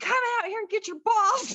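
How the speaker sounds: play-acted very high, shrill hollering yell. Retelling a fight over golf balls in the driveway: imitating someone yelling. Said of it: "I'm yelling at him".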